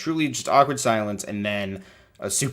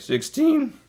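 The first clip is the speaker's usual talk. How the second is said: very high voice cracking on the word "sixteen". Imitating the man introducing members at the annual meeting: voice cracking on sixteen. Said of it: "his voice cracks like that, like sixteen".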